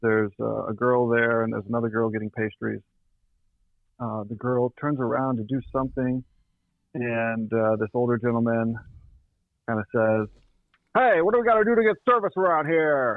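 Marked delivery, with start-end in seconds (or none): 10.9-13.2 mock, very high, powerful, commanding voice with teasing. Retelling an older customer's demand for service: imitating a powerful, teasing voice. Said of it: "In this sort of powerful voice".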